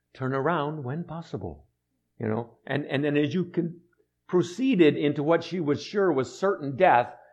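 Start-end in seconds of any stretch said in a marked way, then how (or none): 0.2-1.7 soft, polite British female sat-nav voice. Recalling the TomTom steering them toward a lake, TomTom's nice British lady voice. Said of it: "the nice British lady's voice".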